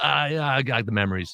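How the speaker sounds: ordinary talk, nothing marked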